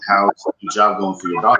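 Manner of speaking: ordinary talk, nothing marked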